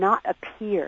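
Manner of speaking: stress on appear. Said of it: "I really want to stress the word appear".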